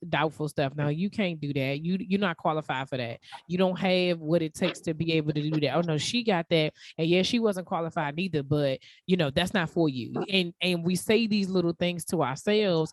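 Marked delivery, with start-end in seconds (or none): none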